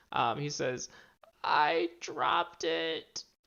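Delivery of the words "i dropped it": shaken, rattled voice, close to tears. Voicing a rattled thief admitting a loss: rattled and tearing up. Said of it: "kinda tearing up a little bit".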